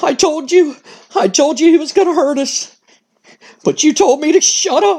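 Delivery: timid, frightened, cowardly, timorous voice. Act out Dude Love talking to himself in a locker room, imitating Dude Love's cowardly, timorous voice. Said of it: "In a in a very cowardice, timorous voice".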